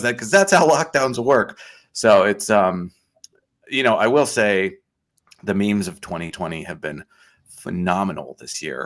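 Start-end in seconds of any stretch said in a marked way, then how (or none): 0.0-1.6 higher-pitched yelling dad voice. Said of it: "the dad is, like, yelling".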